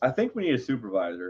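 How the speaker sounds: ordinary delivery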